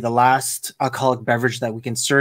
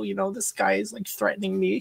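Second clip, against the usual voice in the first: high, frantic, freaked-out put-on voice; 8 semitones higher, 7 dB quieter than usual. Retelling calling security on a threatening customer: imitating own panicked call. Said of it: "freaking out".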